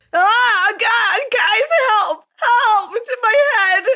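sobbing, very high, pained crying voice. Playing a character with something in her head, crying for help: in-character crying in pain. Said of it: "And I'm just crying in a ball on the floor".

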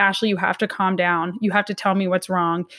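ordinary talk, nothing marked

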